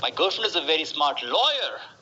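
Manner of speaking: emphasis on "lawyer", pitch climbing up. Answering what your girlfriend does, showing emphasis: stress on lawyer, pitch rise. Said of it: "You emphasize on this. ... Rise in the pitch. Lawyer".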